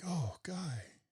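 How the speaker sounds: play-acted affectionate, tender, loving tone. Imitating how another speaker says a name: imitating a loving tone. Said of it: "in a loving tone".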